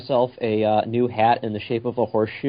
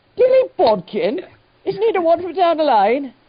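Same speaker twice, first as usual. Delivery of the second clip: very high, swooping, put-on English accent; 5 dB louder than usual. Asking whether a story character is from nearby: English accent. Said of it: "You sound like you're from England".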